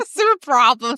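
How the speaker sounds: put-on New York accent. Performing a line in an accent after the other asks: New York accent. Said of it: "New York accent".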